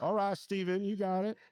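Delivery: put-on Southern accent. Imagining a mentor in a picture offering encouragement: little Southern accent. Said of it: "Try to do a little Southern accent".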